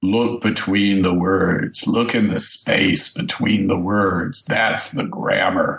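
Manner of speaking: faux deep-sounding voice. Joking with the group, putting on a faux deep-sounding voice. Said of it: "faux deep sounding stuff".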